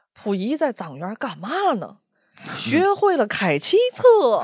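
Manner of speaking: Tianjin dialect delivery. Recalling a guide character at an immersive show, imitating his Tianjin dialect. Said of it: "他用天津话讲".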